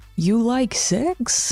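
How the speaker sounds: bad Italian accent that comes out sounding Russian. Act out an old boy coming out of the bushes and addressing you, in a bad italian accent that sounds russian. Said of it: "I don't know how to do an Italian accent".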